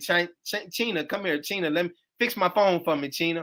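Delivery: ordinary talk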